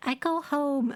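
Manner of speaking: small, high, cute tiny creature voice. Retelling how someone voiced the little fungoid Stool: adorable Stool voice. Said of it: "Tug gave him this like really adorable voice".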